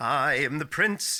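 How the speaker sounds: slow, put-on, noble, heroic prince voice. Naming the role he'd never be cast as: put-on heroic prince voice. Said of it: "I wouldn't be cast as the".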